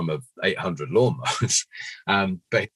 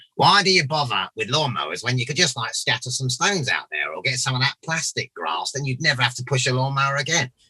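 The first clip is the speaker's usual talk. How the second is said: high, silly, funny comic monster voice; 6 semitones higher than usual. Improvising a character he says has a funny way of talking: funny voice. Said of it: "he's got a funny voice. He he talks like this".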